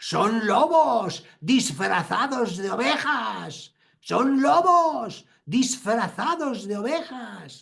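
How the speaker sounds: put-on loud, high, severe, stern, Spain Spanish accent. A speaker recounts the priest's rebuke after confession: mock loud scolding in a Spanish accent. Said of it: "a reprochar en voz alta y acento español".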